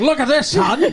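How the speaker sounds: put-on 1940s gangster voice, very high pitch. Explaining the sound of the laugh, in Edward G. Robinson voice. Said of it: "like Edward G. Robinson in a, like, nineteen forties gangster".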